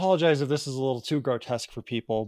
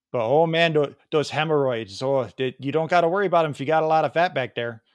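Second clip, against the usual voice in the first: Wisconsin-style accent; 2 semitones higher than usual. Speaker performs a comeback to Tim, in a put-on Wisconsin accent. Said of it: "I can do the Wisconsin accent pretty well".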